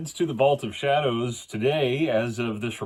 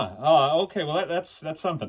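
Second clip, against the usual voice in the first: ordinary delivery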